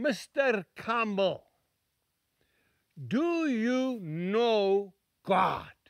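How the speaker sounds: put-on Scottish accent, very slow, "know" stretched. Retelling the question two old ladies asked a preacher: scottish brogue. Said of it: "in that beautiful brogue, that Scottish accent".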